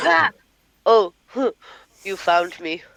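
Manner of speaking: menacing, threatening creature voice on ah. Player describing a weird-looking thing attacking him in a game: imitating a threatening creature. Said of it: "it's just a threatening".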